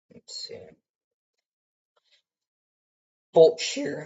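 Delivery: very loud voice that cracks and breaks. Reviewing wind shear data for listeners, the speaker's voice cracks: voice crack. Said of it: "that was a bad voice crack".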